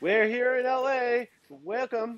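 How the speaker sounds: very high, exaggerated, silly Eastern European accent. Actor recalls doing a stand-up to camera on a local LA show, in a Borat accent. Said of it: "did that Borat accent come on automatically?".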